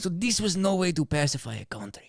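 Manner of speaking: put-on Spanish accent on English words. Reading the Cortez quote again after being teased: put-on Spanish accent. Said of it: "That was better".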